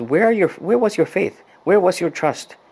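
put-on cross, scolding, high, angry yell. Retelling Jesus scolding his disciples after the storm: imitating an angry yell. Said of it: "he basically yells at them and says".

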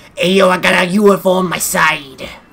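put-on New York accent. Voicing Bowser like a New Yorker after being told to go ahead: New York accent. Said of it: "make him sound like how he was a New Yorker".

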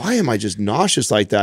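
plain

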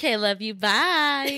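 put-on valley girl accent. Signing off the episode with a goodbye: valley girl voice. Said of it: "That was more Valley Girl than Heather".

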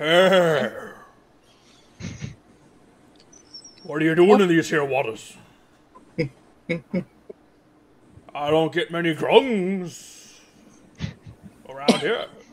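giant dragon turtle creature voice. Voicing a giant dragon turtle who surprises a swimmer: giant dragon turtle voice. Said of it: "this giant dragon turtle goes".

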